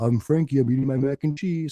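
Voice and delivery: weird, strange dog voice. Retelling how the sister-in-law voiced her dog in videos: weird voice as dog Frankie. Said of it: "would do like a weird voice".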